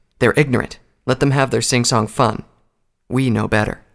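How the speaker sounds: ordinary delivery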